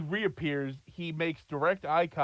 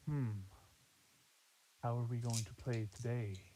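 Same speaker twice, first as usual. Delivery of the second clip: hushed, low, sinister, menacing villain's half-whisper; 4 semitones lower, 10 dB quieter than usual. Narrating to the players, voicing a figure who eyes them, in a Voldemort-like half-whisper. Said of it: "Sounds like Voldemort".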